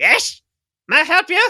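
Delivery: very high, loud little gnome voice. Describing a little gnome popping up behind a counter, little gnome voice. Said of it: "you just see this little gnome pop up".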